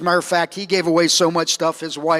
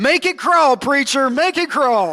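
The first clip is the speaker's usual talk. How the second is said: crowd hollering back together in a call-back yell; 9 semitones higher, 4 dB louder than usual. Retelling a preacher's sermon, speaker quotes the congregation's reply: retelling the congregation's yell. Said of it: "And the congregation yelled".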